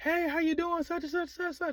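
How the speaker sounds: very high, loud shouting. Acting out greeting someone in a loud club: demonstrating yelling over music. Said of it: "I'm yelling at you".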